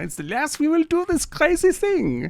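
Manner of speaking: put-on high-pitched villainous German accent. Imitating an actor's film villain: imitating Dieter Laser's movie villain accent. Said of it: "Nazi accent, not German accent, Nazi accent".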